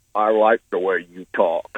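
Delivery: deep, low character voice. A caller greets the show's host in his best: Sling Blade voice. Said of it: "in my best Sling Blade voice".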